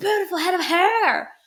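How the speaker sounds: put-on, very high, furious, intense shouting. Explaining a character who hides sadness and anger, retelling a red-faced yell. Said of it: "we're gonna red faced yell".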